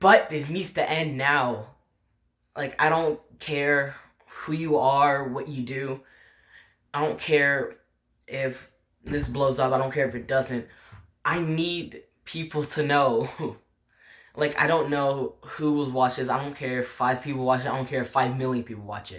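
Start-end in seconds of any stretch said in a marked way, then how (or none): 0.0-13.3 emotional, on the verge of tears, holding them back. An emotional speaker insists that people need to know, holding back tears. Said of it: "I'm holding back tears right now".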